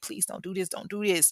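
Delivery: mock imploring, begging, pleading voice. Retelling a shooting, voicing a victim's plea to the shooter: imitating someone begging. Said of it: "who was begging and pleading".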